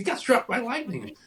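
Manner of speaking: very high, shrieking scream. Retelling how a neighbor screamed the news to the mother: imitating Diane screaming. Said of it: "she screams".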